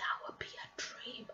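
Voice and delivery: hushed whisper under the breath. Wishing aloud to a listener: whispering. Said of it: "I don't know why I'm whispering".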